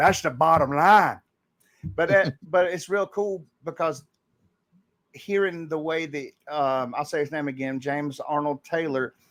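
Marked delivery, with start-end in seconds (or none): 0.0-1.2 put-on low, gravelly voice. Showing how one voice leads into another; Stone Cold Steve Austin voice. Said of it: "bring the tone down, put some gravel in it".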